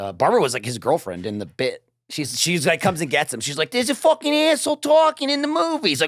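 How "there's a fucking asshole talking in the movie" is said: very high-pitched put-on New York accent. Retelling a comedy bit, voicing the girlfriend character, imitating Barbara's New York accent. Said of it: "it was like New Yorker".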